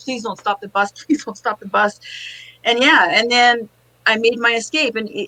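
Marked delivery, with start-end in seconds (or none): 0.0-2.0 crying, tearful pleading, begging over and over. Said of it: "and I'm crying".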